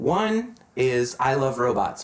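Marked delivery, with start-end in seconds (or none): none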